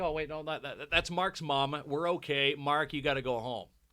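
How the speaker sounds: plain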